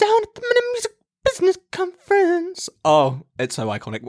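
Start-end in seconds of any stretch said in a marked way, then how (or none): 0.0-2.7 put-on whisper, higher.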